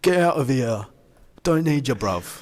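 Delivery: put-on London police voice. Retelling how the police in London threw the group out: imitating the London police. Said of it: "'Cause the police were like".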